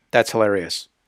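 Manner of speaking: mock, dry, straight-faced, completely deadpan, flat delivery. Retelling what a colleague said about a joke: imitating someone saying it deadpan. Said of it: "completely deadpan, with a straight face".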